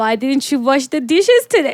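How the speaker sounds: put-on Indian accent, scolding tone. Acting out someone picking on the one thing you did, in a put-on indian accent. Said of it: "somehow Indian accent".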